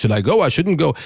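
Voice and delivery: put-on old-world Eastern European accent. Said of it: "It's no longer this, this".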